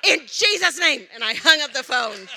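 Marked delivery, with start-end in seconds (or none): 0.0-1.0 high, bold, fierce rebuking scream. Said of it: "I just started screaming".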